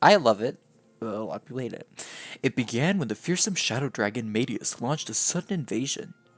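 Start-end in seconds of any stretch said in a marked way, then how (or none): 2.4-6.1 storybook fairy-tale narrator voice. Recapping the backstory of Fire Emblem for viewers, in a narrator voice. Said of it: "time for narrator voice".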